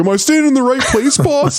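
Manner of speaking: very high, terrible, put-on goon voice. Retelling a scene where Rocksteady stands against the wall: terrible Rocksteady voice. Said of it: "I know it's a terrible Rocksteady voice".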